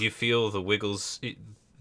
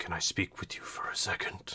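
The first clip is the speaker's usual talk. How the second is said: bassy, rumbling, very hushed whisper; 3 semitones lower, 9 dB quieter than usual. The spooky, ethereal talking man intercepts Zolphanis, whispering in a rumbly voice. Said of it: "he whispers in his rumbly voice".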